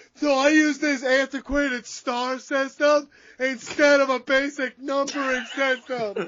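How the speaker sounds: very high, loud, drawn-out yell. Imagining Dave Meltzer explaining his star system to other journalists: imitating Dave Meltzer yelling. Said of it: "You just yell".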